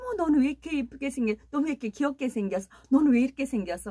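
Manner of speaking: put-on fast, high, gushing baby talk.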